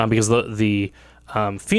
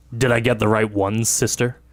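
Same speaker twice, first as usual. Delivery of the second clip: voiced as an orc. Narrator voicing an orc speaking to his sister, in a deep orc voice. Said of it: "in a deep tone".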